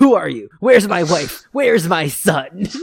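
loud, angry voice. Retelling what Walter shouts when he wakes up: imitating an angry Walter. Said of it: "he is angry as fuck".

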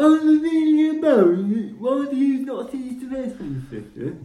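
very high-pitched, stupid-sounding voice. Retelling how an audiobook reader voiced a character: imitating Stephen Fry's stupid-sounding voice. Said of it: "gives her the most stupid sounding voice".

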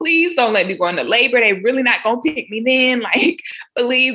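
pleading, begging tone. Retelling begging her stomach not to go into labor: imitating own pleading. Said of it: "pleading to my stomach".

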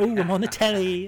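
very high, loud comic voice. Retelling how a waiter in a restaurant spoke: Frank Spencer voice. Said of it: "he just started speaking like Frank Spencer".

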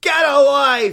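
high, loud, slow yell.

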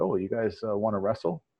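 ordinary delivery

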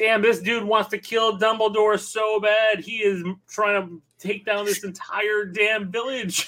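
play-acted yelling, high and drawn out. Retelling yelling to his wife in the other room: retelling own yell. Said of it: "I'm yelling to my wife in the other room".

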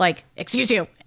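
put-on stern voice. Retelling a six-year-old scolding a dog from her bed: imitating a stern rebuke. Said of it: "she says the dog's name like more stern".

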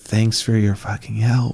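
muttered whisper under breath. Player character answering the dwarf, whispering under breath so only they hear. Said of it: "I whisper under my breath so that only I can hear".

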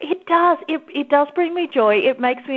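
joyful voice. Speaker answers the other person in conversation; happy voice. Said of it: "you can probably hear it in my voice".

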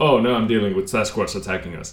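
ordinary talk

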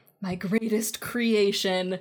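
mock over-dramatic, movie-style delivery. Retelling a cheesy movie scene of a dad talking to Tony: imitating an over-dramatic movie line. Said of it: "a thirty-second dramatic pause".

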